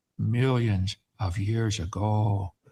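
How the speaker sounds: very slow delivery, each word stressed. Showing how the phrase is supposed to be said: said slowly and emphasized. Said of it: "say it slow and emphasize it".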